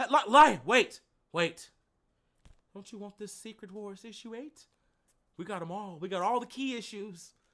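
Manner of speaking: luring, drawing-in tone. Imagining a clown luring him with comics, imitating Pennywise.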